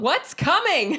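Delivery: high-pitched yell in a put-on character voice. Yelling out a question at the fleeing hobgoblins: yelling in character. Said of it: "And I just yell out".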